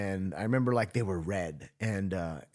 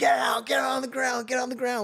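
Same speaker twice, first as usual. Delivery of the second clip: mock screaming, much higher pitch; 4 dB louder than usual. Retelling what a guy shouted over the PA, imitating someone screaming. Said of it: "like of just screaming".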